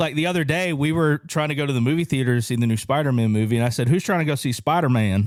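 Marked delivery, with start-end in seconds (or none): 3.9-5.3 slight Southern twang with a light drawl. Retelling asking friends about the movie with a little Southern twang. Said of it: "a little Southern twang".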